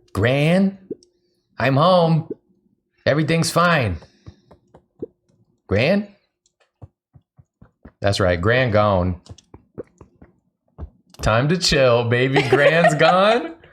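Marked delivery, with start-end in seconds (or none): 0.1-6.0 nervous, uneasy calling out, pitched up. Reader voicing Luca entering home and calling for his grandmother, in Luca's voice. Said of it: "You gotta get into the voice".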